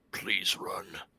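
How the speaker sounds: muttered under the breath. Voicing a character urging another to run: said under the breath. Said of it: "I'm going to say under my breath".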